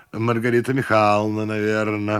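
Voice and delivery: ordinary delivery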